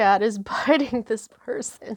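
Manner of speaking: laughing through the words. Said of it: "I'm just laughing because this".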